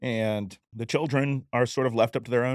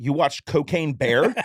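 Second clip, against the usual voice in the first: put-on really loud voice; 4 semitones higher, 6 dB louder than usual. Speaker retells what the first wife said around the corner, imitating a really loud voice. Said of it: "say in a really loud voice".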